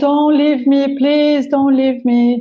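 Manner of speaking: mock tearful, crying, begging plea through sobs. Retelling blocking the door as her husband left: retelling a tearful plea. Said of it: "crying, saying".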